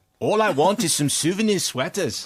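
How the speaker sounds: attempted South African accent. Showing how a line was delivered in a car park: best South African accent. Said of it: "in my best South African accent said".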